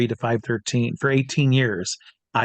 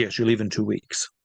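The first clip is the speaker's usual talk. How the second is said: put-on French accent in a deep voice. Retelling how a man sent the speaker to Aruba for a job: imitating a deep French accent. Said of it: "he's French, very deep voice".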